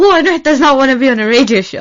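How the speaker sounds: very loud, high, excited shouting. Retelling how they answered when asked to come: retelling a shout. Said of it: "both of us are shouting".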